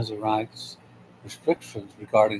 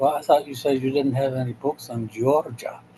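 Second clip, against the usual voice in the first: baffled put-on Polish accent; 2 semitones higher than usual. Retelling a joke about a customer at a bookstore: polish accent. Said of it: "in his uh, Polish accent".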